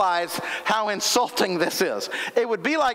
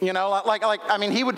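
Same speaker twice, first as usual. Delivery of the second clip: usual speaking voice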